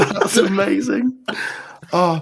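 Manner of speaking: talking through laughter. Reacting to a guest's remark while ending the podcast, laughing while talking. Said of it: "can't stop laughing".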